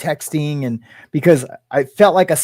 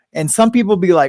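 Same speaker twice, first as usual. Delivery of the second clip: ordinary talk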